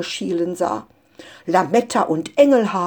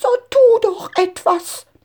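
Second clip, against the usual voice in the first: voice breaking into a very high, shrill shriek; 11 semitones higher than usual. As the Christmas tree spins wildly, a mother calls to the father, crying out, voice cracking. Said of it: "Mutter rief mit überschnappender Stimme".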